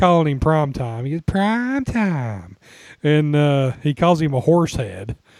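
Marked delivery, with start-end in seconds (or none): 1.2-2.6 put-on very girly, high-pitched voice. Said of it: "a very girly voice".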